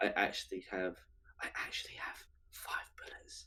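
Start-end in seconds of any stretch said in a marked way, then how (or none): 1.4-3.5 secretive whisper, close to the ear, in character. Handing over a gun in secret, whispering into another player's ear. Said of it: "I whisper this into your ear".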